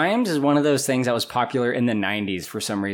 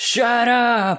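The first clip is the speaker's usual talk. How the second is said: mock lame, very high-pitched yell; 11 semitones higher, 4 dB louder than usual. Describing a scene where Ramsay wakes to street noise, retelling Ramsay's yell. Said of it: "he just yells".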